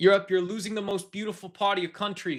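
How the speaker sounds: high, loud yell. Imitating Donald Trump yelling at a helicopter about Europe: Donald Trump impression, yelling. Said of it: "That's what he sounded like".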